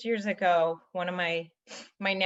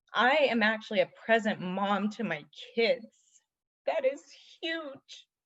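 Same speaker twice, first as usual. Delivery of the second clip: tearful, crying through the words; 4 semitones higher than usual. Speaking to an audience she calls you guys, crying as she talks. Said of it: "and I'm crying".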